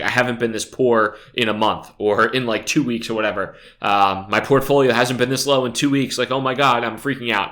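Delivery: ordinary delivery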